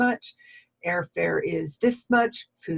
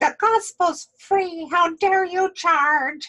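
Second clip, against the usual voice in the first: very high, little, mocking put-on lady voice; 12 semitones higher, 4 dB louder than usual. Quoting a lady's Facebook post, little put-on voice quoting a lady. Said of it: "I love my little voices".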